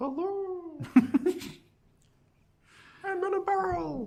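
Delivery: very high, hollow voice echoing as from a barrel. Trying out a voice that seems to come from an empty barrel: echoey voice from a barrel. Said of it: "like an echoey voice".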